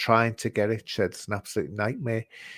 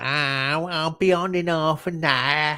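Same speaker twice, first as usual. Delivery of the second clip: put-on Cockney accent; 5 semitones higher than usual. The speaker quotes the guest's message about joining late, quoting Craig in Cockney accent. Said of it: "I gave you the Cockney accent then".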